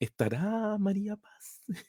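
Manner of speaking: high, soft, slow, flustered, nervous voice.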